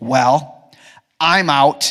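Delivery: carrying stage whisper. Retelling how a kid in church reacted to the answer, imitating a stage whisper. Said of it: "in a stage whisper".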